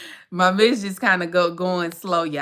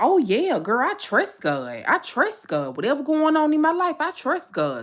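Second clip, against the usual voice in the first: easygoing, casual everyday voice, pitched higher; 7 semitones higher than usual. Mocking how people claim to trust god: imitating people claiming faith. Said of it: "People be like".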